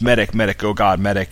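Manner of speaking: ordinary delivery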